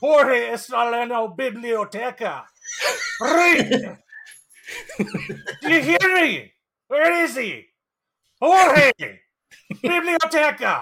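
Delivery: put-on Scottish accent with heavily rolled r's. Improvising a Scottish Spanish teacher on day one of class, Scottish Spanish teacher voice. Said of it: "You're going to do an impression of a Scottish Spanish teacher. ... how's your Scottish?".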